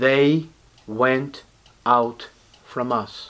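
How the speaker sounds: slow, deliberate, word-by-word reading. Reading verse 19 aloud to listeners asked to pay close attention, reading slowly. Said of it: "I'm going to read slowly".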